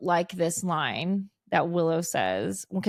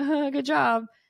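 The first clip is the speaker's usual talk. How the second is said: put-on jumpy, nervous, pitched-up short reply; 7 semitones higher than usual. Retelling an episode scene, quoting Xander: imitating Xander sounding nervous. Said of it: "he's immediately nervous".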